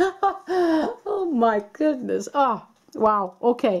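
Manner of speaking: slow, drawn-out, surprised, laughing exclamations. Reacting to the last card drawn, laughing while talking. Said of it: "Sorry that I'm laughing".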